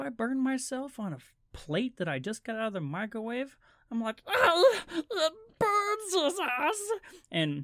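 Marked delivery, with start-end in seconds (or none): 4.3-6.8 very high, slow, drawn-out creature voice. Burning himself on a plate from the microwave, he reacts in his Gollum voice. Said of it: "it's Gollum".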